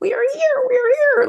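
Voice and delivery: small high cartoon voice. Recalling a cartoon, the speaker quotes the little guy in the clock tower: little voice from Horton Hears a Who. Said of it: "the little voice going".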